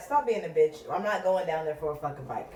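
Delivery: normal talking voice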